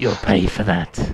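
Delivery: low, gravelly character voice. Voicing a human character during a tabletop game, in a gravelly voice. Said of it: "He's he's gone into gravelly voice".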